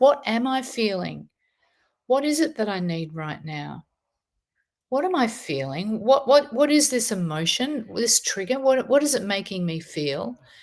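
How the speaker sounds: ordinary talk, nothing marked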